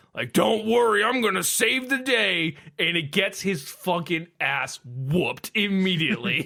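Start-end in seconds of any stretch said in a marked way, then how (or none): 0.4-2.6 swaggering, cocky, boastful bravado, pitched up. Retelling Krampus rushing in like a bat out of hell: imitating Krampus boasting. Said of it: "Krampus coming in like a bat out of hell".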